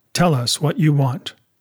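ordinary delivery, nothing marked

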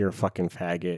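put-on whispered insulting tone. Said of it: "so I just whisper that in my ear".

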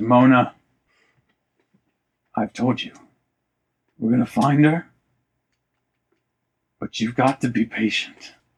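voice wavering a little, slightly shaky and unsteady. As narrator, voicing the captain answering Mona at the bar, slightly shaky voice. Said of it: "his voice gets a little bit shaky".

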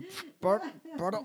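fake burp-filled voice. Imitating the mother's struggling pardon: imitating a pardon full of burp air. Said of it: "un pardon qui reste de l'air, là, de rotte".

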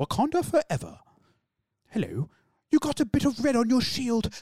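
breathless, panting posh British accent, very high-pitched. Reading a line as a posh british man running after a bus: posh british accent, panting. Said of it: "read it in the accent of a posh British man chasing after a bus".

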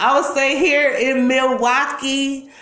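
stress on here in Milwaukee. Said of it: "You have to put emphasis on that".

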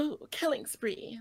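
slow, high-pitched call stretched out long.

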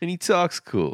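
put-on cool-sounding Cajun accent, pitched very high. Describing a childhood character to a co-host, in a Gambit impression. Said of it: "do you like my impression of Gambit?".

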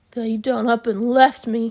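muttered, mumbling. Narrator reads a man left alone in the dark, muttering. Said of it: "he muttered".

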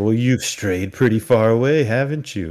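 eerie, oddly off-kilter, creepy stranger voice. Retelling a movie scene, the stranger talking to lost travelers: imitating a creepy character. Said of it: "he gets real creepy".

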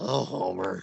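soft cartoonish motherly voice. Wanting to unwind on a Sunday night, the speaker does a bit: Marge Simpson voice. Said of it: "I just wanna do Marge voice".

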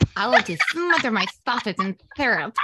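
sinister, little cartoon villain voice with lisp. A co-host repeats her own sentence as a little evil villain with a lisp. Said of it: "It's like a little evil villain with a lisp".

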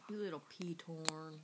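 hushed, drawn-out delivery. Acting out what she would say afterwards, in a slow, quiet voice. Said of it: "it has to be like slow and like quiet".

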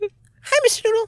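high squeaky cartoon voice. Attempting an Elmo voice, Elmo impression sounding like Mickey Mouse. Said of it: "I keep doing a fucking Mickey Mouse when I do Elmo".

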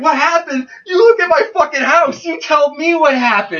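mock very high, loud, tearful crying freak-out. Retelling answering the cops at the door: retelling crying while freaking out. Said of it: "I'm freaking out and I'm crying".

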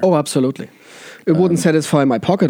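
ordinary talk, nothing marked

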